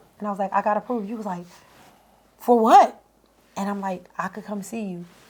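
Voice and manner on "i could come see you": hushed, very quiet half-whisper. Retelling a phone call after getting approved, speaker repeats her words half-whispering. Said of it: "and here I am whispering".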